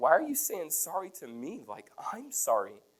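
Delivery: high, swooping blubbering through the words. Retelling a caller's apology and own reply: retelling own blubbering reply. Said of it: "I'm a blubbering idiot".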